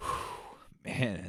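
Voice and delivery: choked-up, overcome whisper. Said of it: "this got me".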